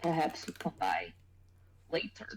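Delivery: soft, hushed, barely voiced whisper. Speaking in character to Fabian: whispering. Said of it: "I'll whisper to Fabian".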